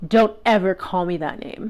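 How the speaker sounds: menacing, threatening, upsetting tone. Retelling what a date said in the Uber: retelling an upsetting threatening tone. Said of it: "quite upsetting tone".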